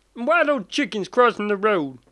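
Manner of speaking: high-pitched southern country bumpkin character voice. A voice actor tries a driver character's line in a Gomer Pyle voice. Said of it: "something like Gomer Pyle".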